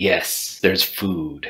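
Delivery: hushed whisper. Voicing a sword that whispers into a character's mind: whispering. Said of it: "Stormbringer whispers into your brain".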